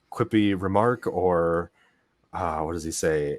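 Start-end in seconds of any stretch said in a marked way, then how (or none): 0.1-1.0 loud, high-pitched yelling. Retelling a film line where he yells at them: imitating someone yelling. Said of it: "yelling at them when they first show up".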